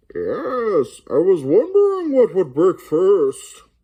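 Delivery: very high, muffled, booming voice, slow and loud. Showing a tip, speaking into a beer glass: Bane impression through a beer glass. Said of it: "get a beer glass".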